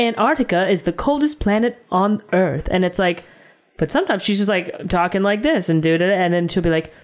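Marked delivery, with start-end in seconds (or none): 0.0-2.7 robotic, machine-like person voice. Describing a woman's inconsistent talking in a movie, imitating her robotic voice. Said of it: "sometimes she talks like a robot person when she's like".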